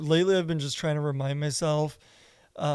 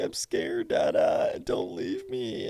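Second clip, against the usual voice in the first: put-on slow, weepy, crying little-kid voice; 7 semitones higher than usual. Retelling what the child says when left at bedtime: imitating a crying child. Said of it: "she's, like, crying".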